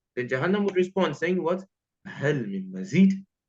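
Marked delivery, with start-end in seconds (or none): 2.1-3.2 stern, grave voice. A speaker retells hell's answer to Allah, acting out Jahannam's stern voice. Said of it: "with that stern voice".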